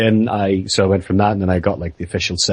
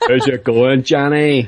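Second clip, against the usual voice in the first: strong, full Northern Irish accent, slow; 5 semitones higher than usual. Showing what going full Northern Ireland sounds like: full Northern Irish accent. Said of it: "I'm trying not to go full Northern Ireland".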